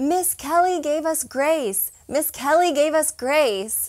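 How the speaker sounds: high, toned-down, mock little boys' hollering. Retelling boys running back across the restaurant: imitating kids screaming. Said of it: "screaming at the top of their lungs".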